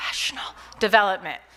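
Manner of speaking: in a whisper. Explaining what the TRIAD acronym stands for, whispered.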